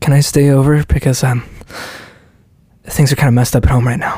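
fragile, delicate voice. Doing an old celebrity impression: fragile Kristen Stewart impression. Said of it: "My old impression of Kristen Stewart I used to do was like, ... It's like always like fragile".

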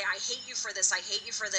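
ordinary talk

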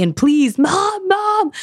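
mock, very high-pitched, begging, pleading scream. Recounting a vivid dream of slipping while holding mechanical teeth, reenacting screaming for mom. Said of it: "I'm screaming for my mom".

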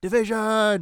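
put-on shout. Retelling how votes are called in Parliament: imitating a shout. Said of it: "he shouts".

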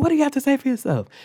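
mock, very high, shrill screaming. Retelling how she screamed a question during a conflict: imitating someone screaming. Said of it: "she was screaming at me".

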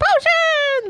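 very high, loud screaming in a goblin voice.

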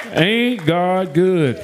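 country accent, laid on heavy and exaggerated. A preacher tells the congregation he's going country on them: going country. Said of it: "I'm going country on y'all now".

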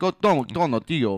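mock, heavy, thick Spanish accent. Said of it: "with a really heavy, like, Spanish accent".

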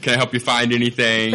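ordinary delivery

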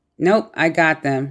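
normal talking voice

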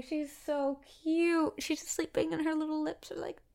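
very high, teary voice, about to cry. Watching Leia sleep, the speaker is on the verge of tears. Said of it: "I'm gonna cry".

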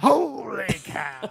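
rough, high-pitched, honking outburst. Imagining a car honk in Harry Caray's voice: Harry Caray voice. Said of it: "the Harry Carey honk would be".

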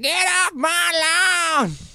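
acted very high, very slow, shrill drawn-out scream. Retelling a story, the speaker quotes the old man, retelling a scream. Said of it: "He's just like screaming".

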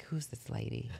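hushed, breathy, soft little voice. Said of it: "You just hear her little voice".

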